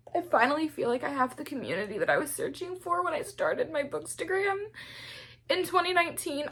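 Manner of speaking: very high-pitched, weepy, tearful crying voice. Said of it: "I don't know why I'm crying like this".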